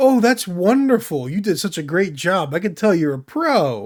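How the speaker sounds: wholehearted, earnest, sincere encouraging tone. Retelling how tutorial characters praise the player: imitating sincere NPC praise. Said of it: "And they're not sarcastic at all".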